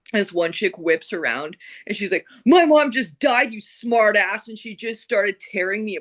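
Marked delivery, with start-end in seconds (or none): 2.4-4.4 acted, aggressive, slow, pitched-up angry outburst. Retelling a woman who tore into the speaker: imitating an aggressive woman. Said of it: "started getting a little bit aggressive".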